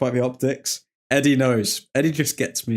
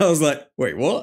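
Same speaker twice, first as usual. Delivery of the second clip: ordinary talk, nothing marked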